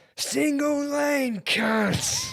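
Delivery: put-on yelling, very high. Retelling how a driver yelled out the car window: imitating a man yelling. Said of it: "he just yelled".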